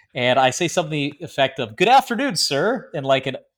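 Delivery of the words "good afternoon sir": very high, bright, sincere, cheerful voice. Retelling greeting an officer in blues: imitating own cheerful greeting. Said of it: "a very cheerful but, but authentic way".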